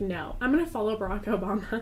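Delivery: ordinary talk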